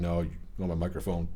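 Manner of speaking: normal talking voice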